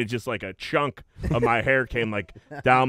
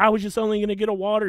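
flustered, frantic, panicky, pitched up, acted out; 9 semitones higher than usual. Retelling a worker confronted by the woman cutting hair, imitating him freaking out. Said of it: "He's freaking out".

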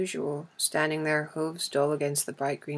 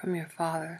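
whispering, much quieter; 4 dB quieter than usual. First-person narrator speaking to Achilles after a herald calls, whispering. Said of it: "I whispered".

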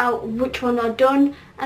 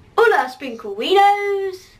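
put-on woman's voice, pitched higher; 6 semitones higher than usual. Doing an impression of Louise's voice: Louise impression. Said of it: "one more shot".

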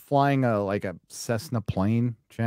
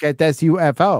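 put-on robotic voice, like text-to-speech; 5 semitones higher, 6 dB louder than usual. Mocking UFO videos on TikTok that use a narrator voice: imitating a robot voice. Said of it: "with the robot voice".

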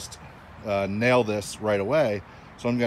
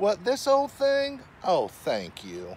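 put-on, very high, swooping Southern belle accent; 10 semitones higher than usual. Answering a compliment on the new cabin, in a Southern Belle impression. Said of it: "That's my best Southern Belle impression".

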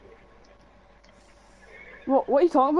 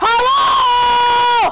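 very high, loud mock yell. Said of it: "and you're like".

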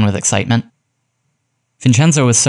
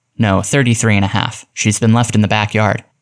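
ordinary delivery

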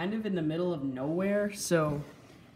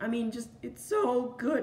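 high voice cracking partway through; 6 semitones higher than usual. Reviewing the sculpt of a creature's feet, voice cracking. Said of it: "that was the worst voice crack".

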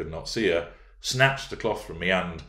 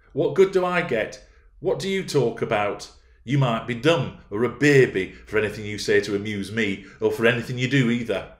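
peevish, exasperated, raised, higher-pitched complaining; 5 semitones higher, 6 dB louder than usual. Catherine to Heathcliff, growing more irritated. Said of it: "growing more irritated".

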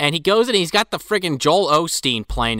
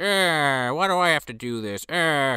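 mock very slow, drawn-out, sulky grumbling; 3 semitones higher, 3 dB quieter than usual. Retelling a movie scene where the orderly kicks rocks: imitating the orderly sulking. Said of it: "kicking up rocks and shit".

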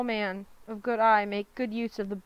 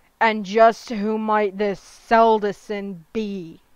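loud, savage growling; 7 dB louder than usual. Narrator reading the father's reply to his injured son, a savage growl. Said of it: "his father growled savagely".

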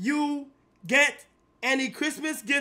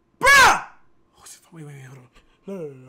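frantic, panicked, very loud outburst with swooping pitch; 10 semitones lower, 8 dB louder than usual. Talking to chat about something that might be real: panicking. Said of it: "I'm panicking right now".

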